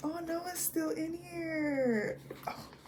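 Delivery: choked up, slow, high, tearful laugh-cry.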